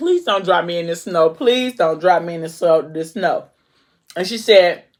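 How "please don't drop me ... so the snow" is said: normal talking voice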